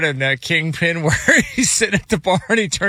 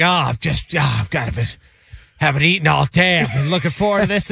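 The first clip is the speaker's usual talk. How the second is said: hammed-up, over-the-top, laid-on-thick theatrical suffering. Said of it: "he would really lay it on".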